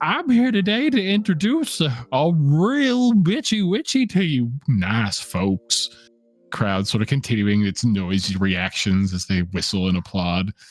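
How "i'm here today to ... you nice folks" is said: very high, silly, goofy cartoon dragon voice. Voicing a goofy dragon caricature greeting a laughing crowd: goofy dragon voice. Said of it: "the goofy dragon sort of speaking".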